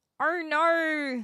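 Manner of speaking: high attempted Australian accent, not drawn out. Wondering whether Australians say the phrase, trying it: attempted Australian accent. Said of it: "I'm trying to think of an Australian accent".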